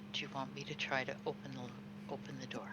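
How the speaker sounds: very quiet. A tabletop player speaks in character while the group gathers near a door: very quiet. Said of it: "I will say very quietly".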